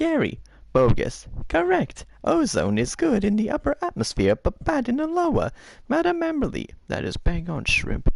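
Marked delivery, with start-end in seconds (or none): 1.5-6.7 very high squirrely voice. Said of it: "Okay, Squirrely".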